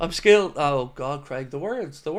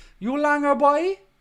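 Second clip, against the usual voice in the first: attempted Cork accent, put-on, pitched very high; 12 semitones higher than usual. Speaker from Wexford, never from Cork, giving their best try, attempted Cork accent. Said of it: "That's my best attempt at a Cork accent".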